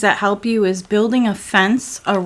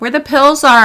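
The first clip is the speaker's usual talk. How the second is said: loud, high shouting while chewing a mouthful; 6 semitones higher, 8 dB louder than usual. Telling another person where the pills are: yelling with mouth full. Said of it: "I'm yelling with my mouth full of pizza".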